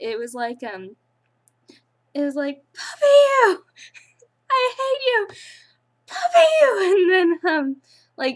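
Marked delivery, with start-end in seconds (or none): 2.7-7.0 very high, shrill, wild unhinged shriek. Describing a woman screaming at no one, imitating someone screaming. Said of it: "She's screaming out to the air".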